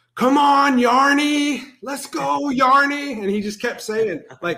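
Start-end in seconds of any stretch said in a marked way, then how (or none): 0.2-3.2 put-on thick Scottish accent, very slow and drawn out. Retelling a fan cheering on a player during the game, in a thick Scottish accent. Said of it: "in his thick Scottish accent".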